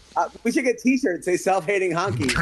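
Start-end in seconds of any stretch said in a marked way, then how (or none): none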